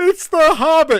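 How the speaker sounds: very high, very loud, shrill, kid-like acted excitement. Retelling when the Shire music came on, imitating Chad's kid-like excitement. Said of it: "he's like super excited, like a kid".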